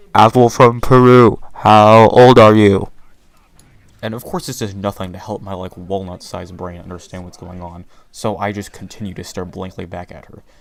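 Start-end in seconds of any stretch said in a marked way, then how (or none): 0.2-2.9 very loud, slow, drawn-out exasperated, frustrated shout. Retelling how she got frustrated at his blank stare, retelling a very loud shout. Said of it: "she shouts very loudly".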